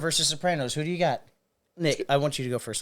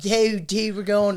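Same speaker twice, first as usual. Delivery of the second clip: put-on Philly accent, much higher; 4 semitones higher than usual. Speakers comparing city accents, one echoes a put-on Philly accent. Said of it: "class it up".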